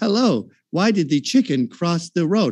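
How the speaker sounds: put-on alien voice. Mocking the other speaker by imitating a movie alien trying humor: alien trying to do humor. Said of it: "the alien is trying to do humor".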